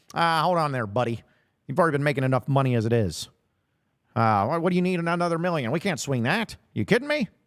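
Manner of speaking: put-on vintage, old-timey twenties radio announcer voice. Imagining Hunter Yurachek answering a coach's request, old-timey 1920s radio host voice. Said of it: "made Hunter Yurachek sound like an old-timey nineteen twenties radio host".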